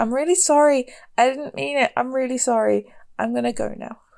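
really sheepish, meek and embarrassed. A player's character picks up a bike and apologizes, really sheepish apology. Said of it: "be really sheepish and like".

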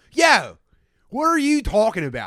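put-on rowdy, very loud, high, swooping drunk Philly holler. Imitating a sister's drunk philly move, interrupting from afar: imitating sister's drunk philly talk. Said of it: "my sister's ultimate drunk Philly move".

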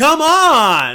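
shrill, very high, loud yell, drawn out. Imitating an actor complaining on set: imitating an actor yelling. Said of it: "That was very loud".

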